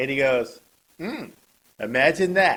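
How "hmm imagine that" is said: mock, loud, smug, smart-aleck sarcastic tone. Retelling what Trump said about a reporter's question: imitating a smart-ass tone. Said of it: "with a real smart-ass attitude".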